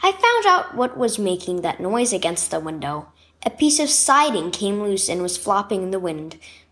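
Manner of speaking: ordinary delivery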